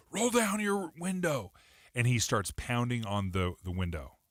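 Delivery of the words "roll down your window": acted, very high, aggressive screamed yelling. Retelling a man's roadside confrontation, acting out his yelling at a driver. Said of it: "he's yelling and screaming at the individual".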